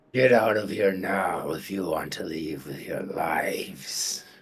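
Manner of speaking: really gruff, rough, harsh voice. A game master voices someone in the darkness warning the players, in a really gruff voice. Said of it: "you hear a really gruff voice come from the darkness".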